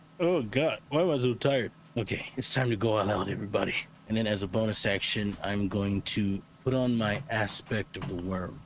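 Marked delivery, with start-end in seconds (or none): 0.2-1.7 high, sleepy, tired groan through a yawn. A player voices the character Typhoon at the start of his turn: yawning, tired. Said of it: "Typhoon kind of yawns".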